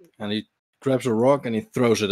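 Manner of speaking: ordinary talk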